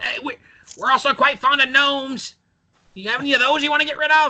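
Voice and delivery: very high, screaming goblin voice, yelled out. As the party walks out, the goblin calls after them; screaming goblin voice. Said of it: "the goblin screams out".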